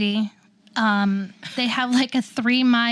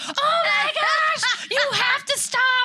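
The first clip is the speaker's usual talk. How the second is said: put-on scream, higher pitch. Retelling a car ride where her mom panicked: imitating mom screaming. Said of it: "My mom is screaming".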